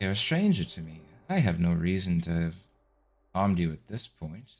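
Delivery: deep, low creature voice. Describing a creature with tentacles around its face, voice its words in a low voice. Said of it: "this sort of low voice is".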